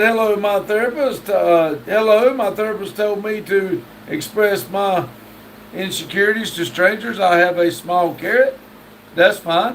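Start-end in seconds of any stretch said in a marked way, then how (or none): none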